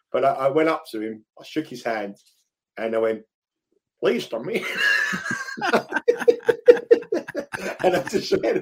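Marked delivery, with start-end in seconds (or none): 4.0-5.7 high, slow, fake American accent. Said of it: "I just went all American".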